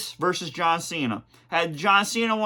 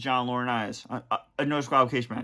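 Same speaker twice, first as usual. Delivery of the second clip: normal talking voice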